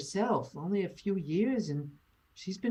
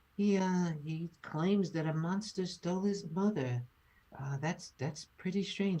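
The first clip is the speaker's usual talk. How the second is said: hushed half-whisper, said off to the side; 5 dB quieter than usual. A character speaks to you on the side so the boy won't hear, half-whispering aside. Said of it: "she whispers on the side to you".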